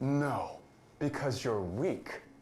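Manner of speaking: obnoxious asshole voice, very high, very loud, shrill. In a scene, a character answers his partner's story, in an asshole voice. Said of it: "He really does have an asshole voice".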